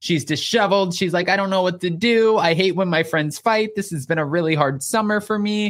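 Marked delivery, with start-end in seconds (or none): 1.3-5.7 mock crying, tearful voice. Retelling how a friend cried on someone's shoulder: imitating someone crying. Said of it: "starts crying".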